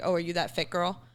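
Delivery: plain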